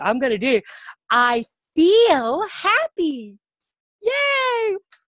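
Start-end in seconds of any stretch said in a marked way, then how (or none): 1.1-4.8 very slow, sing-song cheery voice, drawn-out yay. Showing a lesson on feelings with props: happy teacher voice. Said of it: "I'm gonna do a facial expression too".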